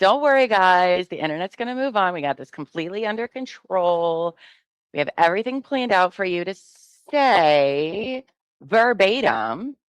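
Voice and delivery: smug, arrogant corporate tone, drawn out. Mocking how arrogant corporate management talks, in a mocking arrogant corporate tone. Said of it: "how they're really arrogant in that whole whole thing".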